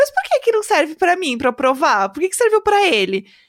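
teasing, half-joking tone with swooping high pitch. Retelling a woman's question to a man as she picks up the glass, half-joking. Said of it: "Meio brincando, assim".

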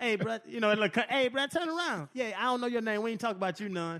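gentle little voice. Retelling how Ronnie talked to players on other teams, imitating Ronnie's nice little voice. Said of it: "his nice little voice would be like".

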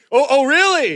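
sudden eager burst, very high-pitched and loud. Imitating Richard reacting to talk of swinging: imitating Richard getting excited. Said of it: "Richard got excited for a second".

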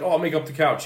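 ordinary talk

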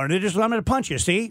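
staccato 1940s movie delivery. Describing how everyone talked in 1940s and '50s shows, in staccato 1940s movie talk. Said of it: "Everyone's real staccato".

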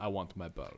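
big, burly, heavy put-on Russian accent. Joking about how a word is spelled, a speaker voices the man saying it, big burly russian accent. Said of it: "big, burly Russian accent".

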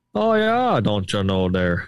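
Upper Michigan accent. Talking about regional accents with a co-host, demonstrating the Yooper accent. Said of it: "the Youper accent either".

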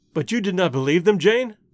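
ordinary delivery

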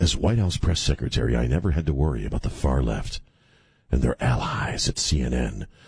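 very low, sultry, seductive, sexy voice. Reading aloud a candidate's campaign statement, the speaker uses a put-on sexy voice. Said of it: "I'm reading it in like a sexy voice".

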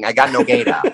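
put-on Brooklyn accent, Brooklyn guy voice. Saying a name the way a brooklyn guy would: brooklyn guy voice. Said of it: "like a Brooklyn guy saying".

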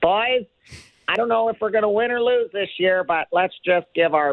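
very high-pitched voice. Speaker talking about Toronto is asked to do a Phil Kessel impression. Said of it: "now I got to do a Phil Kessel impression".

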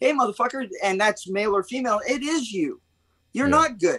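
fired-up, heated, worked-up rant. Speaker addresses anyone listening who thinks they're fine: heated. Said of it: "I got a little fucking heated there".

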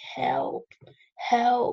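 restrained urgent shout. Recounting running outside holding Lucas, retelling a scream for help. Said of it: "I remember screaming".

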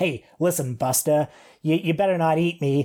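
gruff, tough-talking character voice. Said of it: "the mouse actually talks like this. He talks like [name]".

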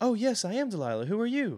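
timid, meek, very high, small voice. Voicing a woman behind the bar greeting visitors: meek small woman voice. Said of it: "A very small, meek woman".

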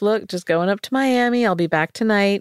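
ordinary delivery

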